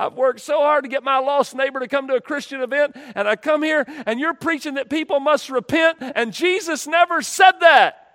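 mock angry screaming, high-pitched, mild yell. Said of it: "in this loud-pitched voice screaming at me".

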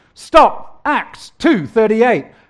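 very loud, authoritative, commanding bark. Telling a story, the speaker acts out a lady confronting a burglar, retelling a loud authoritative shout. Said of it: "with a loud and an authoritative voice, she shouts out".

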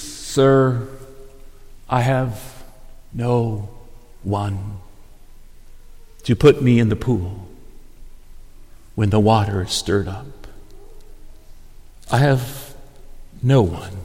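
mock sorrowful, broken, halting, near-whispered sad voice. Speaker quoting the man at the pool speaking to Jesus, retelling in a sad voice. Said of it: "can you hear the sadness in his voice?".

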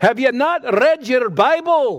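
bad, loud, over-the-top exaggerated Scottish accent. Quoting a Gospel question to the Pharisees, bad Scottish accent. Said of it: "when he was doing a bad Scottish accent".

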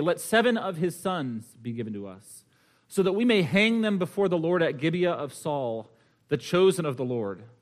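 plain

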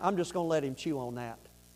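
put-on South Georgia woman's accent. Retelling a hospital visit, quoting what Miss Betty said, Miss Betty's southern accent. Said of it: "she just said in her southern accent".

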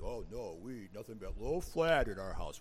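very low, dropped voice. Imitating listeners who claim to eat low fat: imitating a low-fat-eating listener. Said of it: "Some of you are like".

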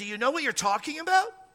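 put-on very kind tone. Retelling a question put to a man who lets them into the yard, asking kindly. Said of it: "I said it very kindly".

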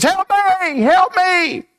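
put-on very high, slow, stretched-out desperate cry. Describing judgment day, the speaker acts out everyone crying out: imitating desperate yelling. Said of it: "yelling at the top of their lungs".

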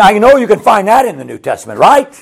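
heavy tongue-in-cheek sarcasm, loud, swooping pitch. Mocking a worldly way of winning converts, speaking sarcastically. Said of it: "I'm speaking sarcastically".

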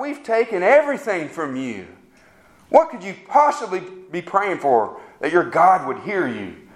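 mocking, swooping, jeering taunt. Speaker retells a man at an iron door taunting a praying prisoner, imitating a mocking tone. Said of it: "And in a mocking tone".

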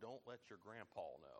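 soft, barely there, half-whispered. Retelling an uncle secretly handing over a book: Uncle Don almost half-whispering. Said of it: "almost in a whisper".

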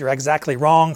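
normal talking voice

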